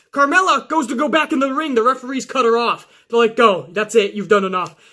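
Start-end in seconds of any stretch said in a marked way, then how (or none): none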